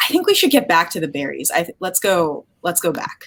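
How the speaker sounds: calmest forced voice, pitch swinging. Player character turning to Whisper and Moss, speaking in the calmest voice possible. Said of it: "in the calmest voice I can manage say".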